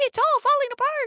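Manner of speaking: very high, squeaky cartoon voice. Showing a listener how to recast an anxious thought, in a high-pitched Mickey Mouse voice. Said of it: "imagine this high pitched cartoon voice saying".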